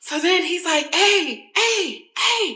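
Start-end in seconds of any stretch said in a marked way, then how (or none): 0.9-2.6 frantic, high, panicked, repeated screaming. Retelling a jet ski slipping over, imitating him screaming. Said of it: "He's just screaming".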